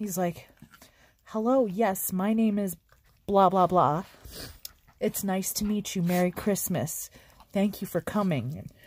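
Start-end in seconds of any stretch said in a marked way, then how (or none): 1.2-8.6 put-on very polite child acting grown-up, lower. Retelling what a very polite child said at church: imitating a polite kid acting grown-up. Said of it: "he was like a little adult".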